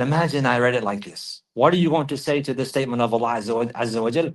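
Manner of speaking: ordinary talk, nothing marked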